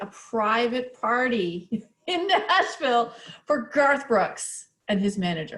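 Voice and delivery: slow, deliberate, each word clearly spelled out. Speaking to listeners, deliberately slowing down for this part; slowed down. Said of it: "I want to slow it down".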